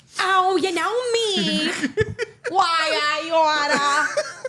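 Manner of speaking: heavy put-on New York accent. Speaker shows off a new accent bit she's working on: New York East Side accent. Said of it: "That's that whole New York East Side accent".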